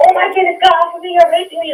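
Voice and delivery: crazy, frantic outburst, very high. Showing how not to ask someone to stop: crazy, frantic delivery. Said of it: "Not in, like, a crazy".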